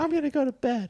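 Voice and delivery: mock, shrill, very high squealing yell. Retelling arguing with parents at bedtime as a child: imitating own past yelling. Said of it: "I'm yelling at them".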